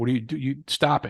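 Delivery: ordinary talk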